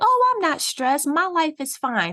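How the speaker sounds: high, breezy, mock carefree tone. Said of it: "they're like".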